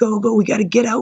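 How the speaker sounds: high, urgent, panicked pleading. Retelling fleeing from under the cliffs with others, retelling panicked urging. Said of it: "Like I was in panic mode".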